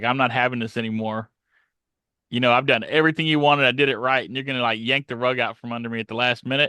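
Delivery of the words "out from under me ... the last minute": ordinary talk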